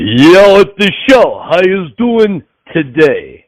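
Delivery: tough Philadelphia boxer voice, acted character impression. A guest introduced on the show greets the hosts in Rocky voice. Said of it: "in your best Rocky voice".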